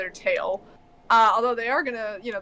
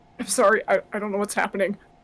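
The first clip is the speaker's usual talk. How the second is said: quivering, trembling voice, struggling to keep control; 4 dB louder than usual. Voicing a character who is shaking and fighting himself: shaking, struggling apology. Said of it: "he's kinda shaking a bit, like he's trying to fight".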